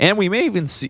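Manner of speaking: voice breaking, jumping way up high. Commentator calling a match as units move out, voice cracking. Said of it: "excuse me, voice crack".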